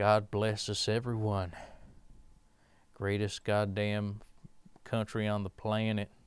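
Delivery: put-on southern twang. Speaker starting a bit for viewers, in a put-on southern twang. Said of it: "talk in a when in a southern twang".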